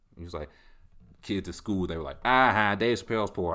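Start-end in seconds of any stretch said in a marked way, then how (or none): 2.3-3.6 loud, raised, mocking voice laughed through. Showing the voice for reading tweets: Dave Chappelle mocking laugh voice. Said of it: "That's the voice".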